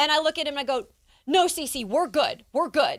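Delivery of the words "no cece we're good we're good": forced brave, reassuring tone. Retelling turning down an offer of help: retelling a put-on brave face. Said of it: "trying to put on this brave face".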